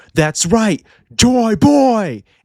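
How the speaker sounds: high-pitched scream. Recapping a fight scene, quoting a character's flashback cry; retelling a scream. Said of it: "and he screamed".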